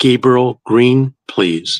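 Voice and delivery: metallic, machine-like male voice, phone-filtered. Retelling a late-night phone call he answered, imitating a metallic male voice. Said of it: "I heard this male metallic voice say".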